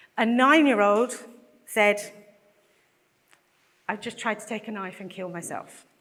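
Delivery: choked-up, breaking voice, on the verge of tears. A mother recounting what her nine-year-old told her, voice breaking, close to tears. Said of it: "and I am going to cry, I'm sorry".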